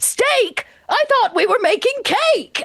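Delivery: very high, yelled-out voice. Voicing an uncle who mishears the plan: uncle yelling. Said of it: "as he kind of yells out".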